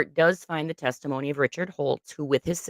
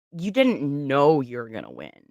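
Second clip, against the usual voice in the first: put-on snarky tone. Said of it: "that kind of tone".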